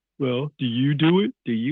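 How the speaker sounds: slow, dim-witted, clueless-sounding voice. Imitating people who ask whether you do it yourself: imitating people asking dumb questions. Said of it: "I don't know why I'm making that, that sound".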